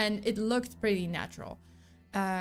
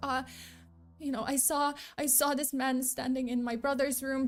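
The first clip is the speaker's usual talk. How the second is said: put-on high, trembling, faltering voice; 5 semitones higher than usual. Retelling how a woman answered the detective's question, imitating a shaky voice. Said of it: "this shaky voice".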